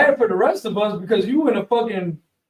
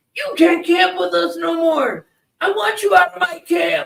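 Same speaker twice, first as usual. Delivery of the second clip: put-on yelling, higher pitch; 9 semitones higher than usual. Retelling an argument at a camp: imitating someone yelling. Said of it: "they're yelling at each other".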